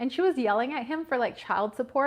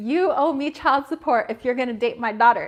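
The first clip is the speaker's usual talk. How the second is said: louder put-on screaming; 7 dB louder than usual. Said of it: "screaming at my boyfriend".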